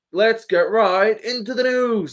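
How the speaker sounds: slow, drawn-out, high-pitched news-intro announcer style. Quoting the Drama Alert host's opening line: imitating Keemstar's intro line. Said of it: "what's the quote he does?".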